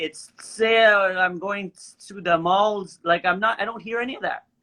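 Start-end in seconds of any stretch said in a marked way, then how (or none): 0.0-3.0 very slow, put-on French Canadian accent. Speaker insisting she doesn't sound French Canadian; French Canadian accent. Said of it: "speak like French Canadian and be like".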